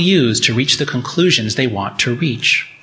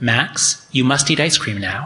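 even, very level, flat monotone. Retelling an after-dinner experiment, speaking to him in a very level voice. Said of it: "in a very level voice".

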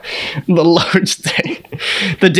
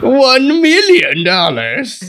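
pitched-up, swooping, grandiose cartoon villain voice; 6 semitones higher than usual. Joking that a friend sipping with pinky out is now Doctor Evil: Doctor Evil voice. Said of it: "now he's Doctor Evil".

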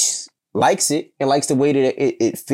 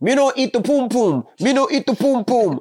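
put-on Jamaican patois accent, very high-pitched; 9 semitones higher than usual. Joking about how Jamaican guys feel, Jamaican accent impression. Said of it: "especially Jamaican guys, oh".

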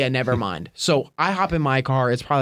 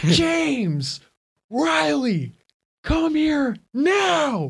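very high, very slow, drawn-out yell, acted out; 13 semitones higher than usual. Retelling calling two friends who are far behind: imitating own past yell. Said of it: "and I'm yelling".

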